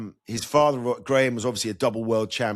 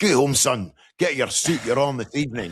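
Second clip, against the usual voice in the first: strong, thickly laid-on broad Scottish brogue. Retelling a phone call from the Scottish head of Sky Sports, in a broad Scottish accent. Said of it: "in his broad Scottish accent".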